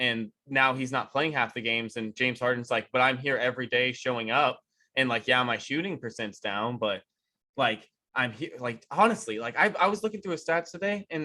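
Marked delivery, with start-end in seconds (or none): none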